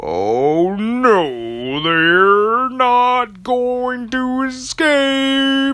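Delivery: very slow, very high, loud drawl, stretched-out no. Telling a story, voicing Eagle McEvil as he speaks, very slowly. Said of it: "He speaks very slowly like that for some reason".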